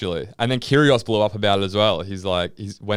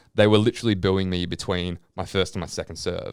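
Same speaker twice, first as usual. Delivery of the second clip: normal talking voice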